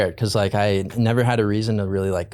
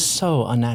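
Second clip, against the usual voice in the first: usual speaking voice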